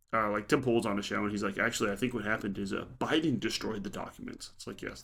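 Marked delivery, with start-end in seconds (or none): none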